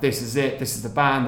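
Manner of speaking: usual speaking voice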